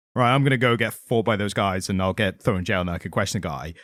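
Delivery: plain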